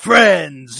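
very loud, booming, belted-out voice. Retelling how Hondo would greet everyone on arrival: Hondo Ohnaka voice. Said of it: "and Hondo's like".

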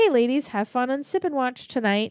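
put-on old-school news correspondent voice. Podcast co-host introduced as the correspondent, greeting listeners in an old-school news correspondent voice. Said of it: "I'm picturing like the news correspondent, like the old school news".

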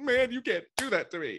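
exaggerated, high, loud mock protest.

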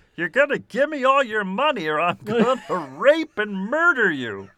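animated, swooping cartoon martian voice. Voicing an imagined man from a mugshot, in a Marvin the Martian-like voice. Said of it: "it's gone on a Marvin the Martian spectrum".

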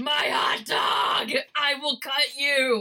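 mild battle-cry roar. In a game scene, a character threatens an opponent, roaring. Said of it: "Tess just roars".

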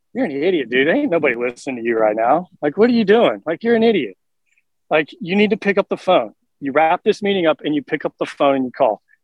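ordinary talk, nothing marked

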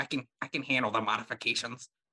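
put-on nerdy voice. Quoting the nerdy scroll guy who sounds unlike the warrior scrolls; Steve Urkel voice. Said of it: "he does like a Steve Urkel voice".

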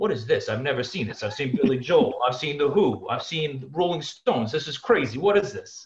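put-on New York accent. Speaker retells longtime ushers leaning in with questions at an esports event, new york accent. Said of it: "in a New York accent saying".

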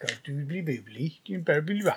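soft, garbled, hard-to-follow mumbled vicar babble. Playing a game with friends, speaker imitates how the villagers talk, like the vicar. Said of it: "They talk a bit like that vicar bloke".

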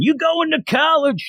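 very high-pitched, loud screaming voice. Telling a story about someone's job, imitating a screaming boss. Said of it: "and he's always screaming".

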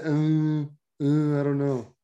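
mock unexcited, reluctant delivery. Retelling the other speaker's answer to an offer of food: imitating an unexcited reply. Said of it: "it didn't sound excited".

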